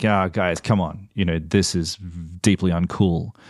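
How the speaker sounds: ordinary delivery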